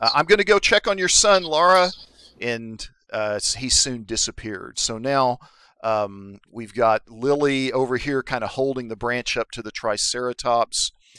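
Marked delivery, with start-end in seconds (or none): 0.1-1.9 high, loud yell carrying across a distance. Voicing an older man trotting off, yelling back at the car: yelling back to someone. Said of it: "he kinda yells back at the car".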